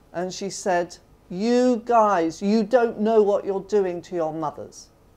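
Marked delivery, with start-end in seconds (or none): 1.3-4.9 acted angry, scolding woman's voice. Retelling a mother scolding young men in prison: imitating an angry woman. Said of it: "She was quite angry".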